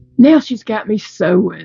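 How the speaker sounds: acted, disgusted, put-upon voice dripping with disgust. Speaker retells what he said in the car with a friend, mock-disgusted. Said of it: "he said it with such disgust".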